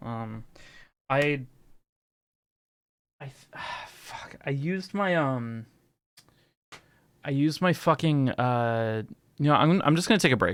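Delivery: frazzled, flustered, scattered speech. Stumbling to explain taking a break: frazzled, flustered speech. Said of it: "Sorry, I'm all frazzled".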